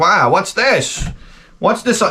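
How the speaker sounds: put-on high-pitched, elderly announcer voice. Retelling what the eighty-five-year-old announcer said about a car: imitating an eighty-five-year-old announcer. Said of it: "he's like this eighty-five-year-old guy".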